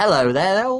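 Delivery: put-on very high-pitched, lovely London Cockney accent. The game master voices a woman greeting Elle; Cockney accent. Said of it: "you hear her speak with a lovely Cockney accent".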